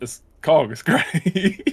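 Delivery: laughing, mock sarcastic tone. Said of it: "I'm obviously joking".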